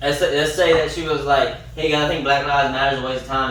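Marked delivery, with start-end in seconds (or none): none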